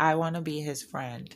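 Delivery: ordinary talk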